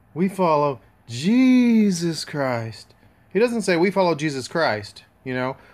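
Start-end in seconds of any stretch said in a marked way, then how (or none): 0.1-2.9 very slow, lulling hypnotist cadence. Questioning who talks like that and showing the way it is said, talking like a hypnotist. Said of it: "A hypnotist?".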